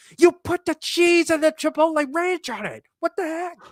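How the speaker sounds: very high, shrill, loud screaming. Retelling how the waitress yelled at the cooks: imitating a waitress screaming. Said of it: "screaming at them".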